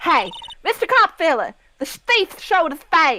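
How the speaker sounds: fake rough, gravelly voice. Voicing Lotta in a game reading: voicing Lotta from Ace Attorney.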